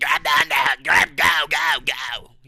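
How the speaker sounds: slow, loud, drawn-out hollering. Retelling a fight as a cornerman screams in the back: imitating a screaming cornerman. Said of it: "He kinda sounded like that".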